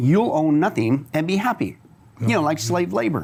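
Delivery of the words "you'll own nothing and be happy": ordinary talk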